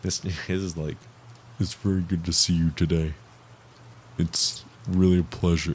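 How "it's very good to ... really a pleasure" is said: very deep voice, strained to go as low as possible. Try to show listeners how deep Mister Haunted's voice is, in a failed deep Mister Haunted voice. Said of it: "Mister Haunted has this fucking so deep".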